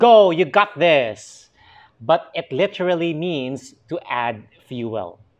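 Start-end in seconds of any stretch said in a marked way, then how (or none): 0.0-1.5 loud, slow, encouraging cheer. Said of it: "It's like".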